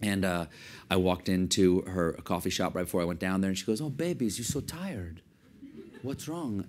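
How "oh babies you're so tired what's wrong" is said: put-on woman's voice with an Algerian accent. Imitate the woman from Algeria greeting you in her coffee shop, in a put-on Algerian accent. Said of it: "And this is my Algerian accent".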